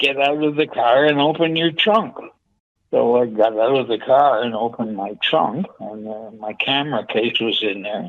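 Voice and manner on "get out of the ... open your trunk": put-on screaming, barked harshly. Retelling a fire guy ordering the car trunk opened: imitating someone screaming. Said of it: "the fire guy is screaming at me".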